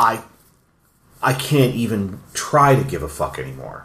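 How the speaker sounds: weary, burnt-out, fed-up tone. Imitating a movie character who no longer cares: imitating a character who's done. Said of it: "angry to just being done".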